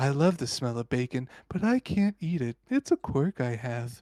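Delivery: put-on calm voice. Retelling a voice coach's exercise instructions: imitating Robin's calm, smooth voice. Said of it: "she talked very calm and smooth like this".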